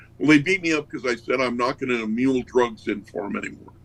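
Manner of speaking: ordinary talk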